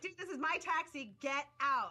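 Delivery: put-on, pushy, scolding yelling. Retelling telling a man to get out of the taxi: imitating own yelling. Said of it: "I started yelling at him".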